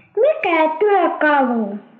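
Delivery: put-on high-pitched, slow, crying child voice.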